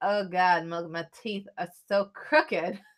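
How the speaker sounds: usual speaking voice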